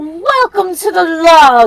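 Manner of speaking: mildly irritated, slightly annoyed put-on voice. Voicing Moss after being asked to do his voice: Moss's voice. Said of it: "can you do Moss?".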